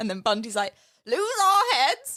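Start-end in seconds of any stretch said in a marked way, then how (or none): 1.1-2.2 put-on Yorkshire accent pitched right up high. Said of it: "That Yorkshire accent".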